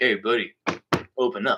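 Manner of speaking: goofy put-on dad voice, really low. Retelling how his dad, goofing off, called into the bathroom, really low put-on voice. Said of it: "he did a really low voice and he's like".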